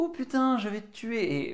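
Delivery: light, friendly, good-natured tone, a touch high. Demonstrating a conversational tactic, said in a light, friendly tone. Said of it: "mais en disant ça de manière un peu sympathique".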